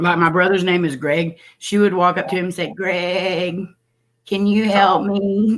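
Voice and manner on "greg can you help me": very slow, dragged-out, quivering bleating goat voice. Imitating a girl asking the speaker's brother for help, imitating a goat-like quiver. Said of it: "this quiver in her voice all the time that made her sound like a goat".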